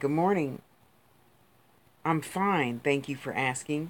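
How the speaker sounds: put-on politeness laid on sarcastically. Retelling how to answer someone who drops a link: imitating her own sarcastic reply. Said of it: "being sarcastic".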